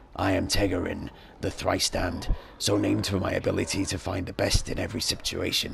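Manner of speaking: devilish fiend character voice. A fiend introducing himself and his companion: Tegarin, scaled fiend voice. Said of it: "We are a pair of Abishai, on leave from our current assignments on Beator. I am [name], the thrice-damned, / You see a scaled fiend who looks very similar to the one standing next to him. In addition".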